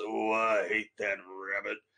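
deep voice with real gravel in it. Discussing the character's voice actor, the speaker quotes the character's line: Yosemite Sam voice. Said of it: "the real deep, gravelly voice".

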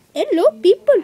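fake, put-on Chinese accent. Greeting the audience again after losing it, in a fake chinese accent. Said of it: "I got it back".

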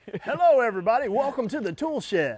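put-on radio announcer voice. Switching to 'my radio voice' for the show intro: put-on radio announcer voice. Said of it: "My radio voice".

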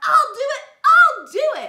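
very high, very loud, eager excited yell. A party guest volunteers to be the bunny, excited yell. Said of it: "He yelled real excited".

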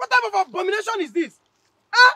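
screaming. Scolding someone for dumping waste on the farm: screaming. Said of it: "Why is he screaming?".

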